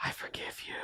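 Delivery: whispered, barely there, very quiet. Recounting a scene where a sister answers her brother's apology; retelling a whisper. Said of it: "She like whispers it".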